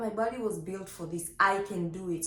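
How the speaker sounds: plain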